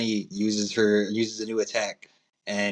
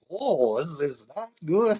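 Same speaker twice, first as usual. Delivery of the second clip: very slow, pitched-up, every word drawn way out; 6 semitones higher than usual. Imagining how a manga line would sound in Kizaru's voice: Kizaru voice. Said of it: "imagine that in Kizaru's voice".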